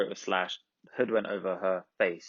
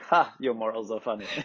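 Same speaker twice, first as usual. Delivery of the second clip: put-on giggling. Retelling how a character reacts after breaking in against her wishes, retelling a giggle. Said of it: "he just giggles at Eve like".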